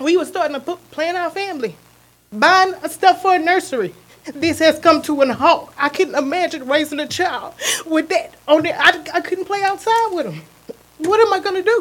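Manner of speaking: distressed, upset voice. Speaking at a public hearing, ending comments: upset. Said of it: "I'm sorry for being upset".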